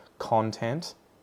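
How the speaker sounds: CON-tent, first syllable stressed, second reduced to schwa. Contrasting stress placement in english words: stress on first syllable of content. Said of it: "first syllable is stress, second one is the schwa sound".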